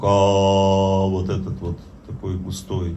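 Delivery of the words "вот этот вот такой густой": low, soft, thick, deep voice. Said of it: "нёс вот этот себе звук".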